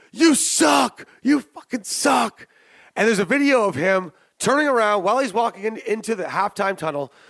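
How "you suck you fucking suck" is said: mock rough yell, high and drawn-out. Describing a video from a halftime tunnel, imitating a fan yelling. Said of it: "Some fan yelled out".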